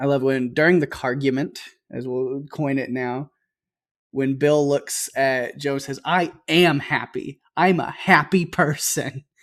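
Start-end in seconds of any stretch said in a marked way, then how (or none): 6.0-9.2 play-acted, very slow, plainly furious delivery. Retelling a movie character's line from an argument: imitating an angry line. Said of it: "as he says in the most angry way".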